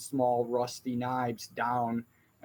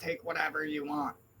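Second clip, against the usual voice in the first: hissing reptile-creature voice, higher and quieter; 4 semitones higher, 5 dB quieter than usual. Voicing a reptilian creature in the front line: sibilant reptilian voice. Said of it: "in a sibilant voice, reptilian in nature".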